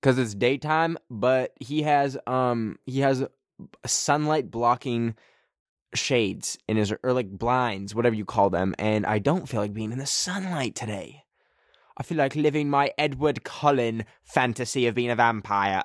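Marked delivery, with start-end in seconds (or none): 12.0-15.8 put-on British accent. Joking about a vampire fantasy: british accent. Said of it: "I don't know why I did a British accent".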